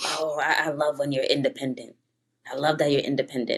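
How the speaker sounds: low man's voice. Retelling what a man tells her: imitating a man. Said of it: "when a man tell me".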